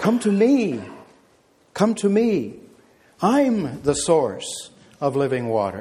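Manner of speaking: put-on, slow, drawn-out, preacher-style proclaiming. Preaching, acting out the Savior calling out at the pool; retelling a loud shout. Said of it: "he shouts out loud".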